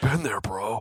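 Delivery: put-on surfer-dude voice. Repeating a character's line to a co-host, in a surfer voice. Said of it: "He did have like a surfer voice".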